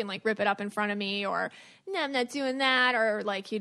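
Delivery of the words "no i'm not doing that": put-on cocky, dismissive, disrespectful kid voice. Teacher retelling how a student talked back when refusing to do his work. imitating a disrespectful kid. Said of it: "He was like a poser, disrespectful kid".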